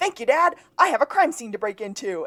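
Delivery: put-on full-out shrill yell, high and loud. Retelling a character's line from an episode: imitating someone screaming. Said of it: "and screams".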